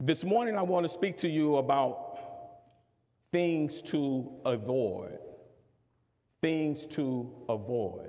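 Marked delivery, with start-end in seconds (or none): 3.3-8.1 "things" heavily stressed, slow and falling. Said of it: "Emphasis on things, not people".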